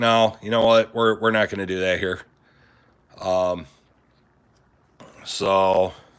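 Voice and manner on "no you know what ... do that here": ordinary delivery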